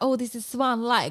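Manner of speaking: put-on clumsy Russian accent. Recalling a scene, quoting a woman's line in a bad Russian accent. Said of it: "that's not what Russian accents sound like".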